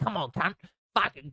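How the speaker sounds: put-on high, screamed Australian accent. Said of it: "screaming obscenities at him in a language and an accent".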